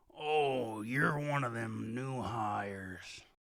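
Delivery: burly put-on orc character voice. Game master voicing an orc looking down at a player, burly orc voice. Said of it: "The burly orc looks down at you and with its long tusks begins to speak".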